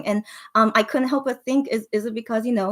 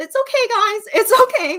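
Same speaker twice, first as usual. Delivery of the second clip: raised, tearful voice, crying while calming down; 12 semitones higher, 6 dB louder than usual. Telling a sad story to listeners for the first time, crying. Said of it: "I didn't think I would cry saying this".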